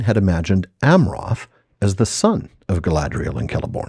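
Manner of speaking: ordinary delivery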